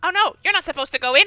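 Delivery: put-on goblin voice, high and loud. Narrating a game as everyone stands at a door, the speaker voices a goblin: goblin voice. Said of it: "this goblin goes".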